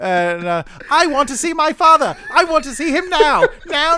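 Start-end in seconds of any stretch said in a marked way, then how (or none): 0.9-3.9 put-on silly, pitched-up, demanding spoiled-kid voice. Retelling what she said, in a silly impression of her. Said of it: "my silly impression of her".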